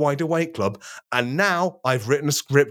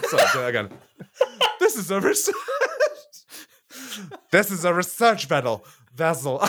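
high, swooping talk breaking up with laughter; 5 semitones higher than usual. Trying to repeat a line from a silly scene, the speaker keeps laughing while talking. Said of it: "Sorry, I'm just laughing too much".

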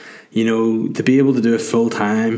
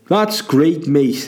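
bad put-on Liverpool comedian voice, higher pitched; 5 semitones higher than usual. Retelling a TV show scene in Belfast, voicing John Bishop: terrible John Bishop impression. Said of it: "The most insulting and terrible John Bishop impression ever".

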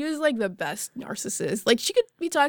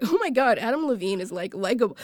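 ordinary talk, nothing marked

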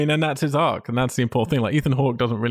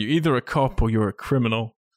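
usual speaking voice

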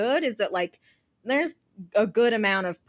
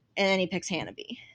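usual speaking voice

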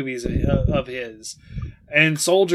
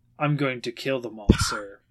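flat, low, quiet, utterly emotionless delivery; 5 semitones lower, 8 dB quieter than usual. Retelling a 90s action movie scene, imitating a deadpan delivery. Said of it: "deadpan looks at her and like straight up just goes".

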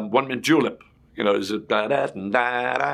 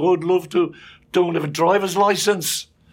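put-on eager Birmingham accent, pitched up; 8 semitones higher, 4 dB louder than usual. Retelling a man's reply to an invitation, in a Birmingham accent. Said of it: "it was Birmingham accent".

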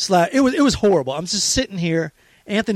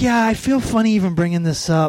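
put-on soft-spoken male voice. Retelling a phone call from a man about the city inspectors, imitating a soft-spoken man. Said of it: "He's like really soft spoken".

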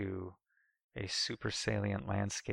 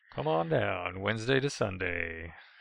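baseball announcer voice, like at a ballpark; 6 dB louder than usual. Plugging their bottle-opener business's open days, in a baseball announcer voice. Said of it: "It's like a baseball announcer".

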